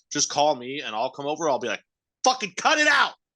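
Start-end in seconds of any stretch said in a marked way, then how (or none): 2.2-3.1 play-acted, high-pitched, shrill, loud, furious yell. Offering to discipline the listener's daughter, acting it out: put-on angry yell. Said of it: "I'll yell at your kid for you".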